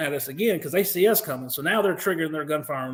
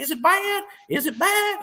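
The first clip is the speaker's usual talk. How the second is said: put-on very high, very slow, drawn-out country Alabama accent; 13 semitones higher than usual. Retelling a wounded comrade asking about his injury: imitating Bodie's country Alabama accent. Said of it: "He's really country".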